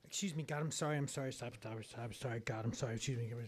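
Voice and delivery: fast, very low, barely audible mumbled gibberish. Retelling a repeated apology habit to god, fast, low mumbling. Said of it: "I would say it so fast and low that it sounded like gibberish".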